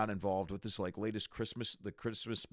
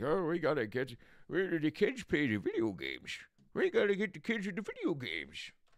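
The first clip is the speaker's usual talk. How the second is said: put-on old-man voice, high and swooping; 7 semitones higher than usual. Act out how Bob Iger sounded on the earnings call: Bob Iger as an old man. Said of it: "sounded like an old man talking".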